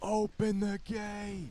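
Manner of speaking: very high, called-out cry. Impression of a guy on a drawbridge, drawbridge guy calling out. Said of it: "That's my impression of like a guy who stands on the drawbridge and calls out things".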